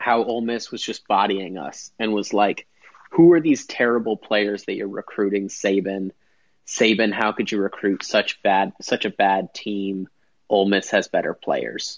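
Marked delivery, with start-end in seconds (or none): none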